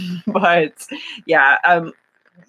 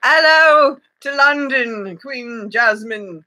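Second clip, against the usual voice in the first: really bad fake British accent, high-pitched and very drawn out; 6 semitones higher than usual. Greeting a viewer in london: really bad british accent. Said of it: "my really bad British accent".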